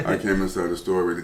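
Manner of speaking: low, quiet, flat deadpan drone. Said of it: "That's how he talks".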